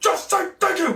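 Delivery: mock, very high, shrill, exasperated, fed-up yell. Recounting yelling at the screen while watching, retelling own yelling at screen. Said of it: "I was yelling like I am now".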